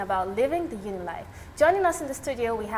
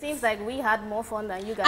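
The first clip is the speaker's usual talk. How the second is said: ordinary talk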